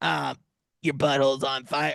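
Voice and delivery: strained character voice. Pitching a hot sauce as Steve: Steve voice. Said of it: "This is how Steve will. ... I can't do his voice for that long. It hurts my fucking throat".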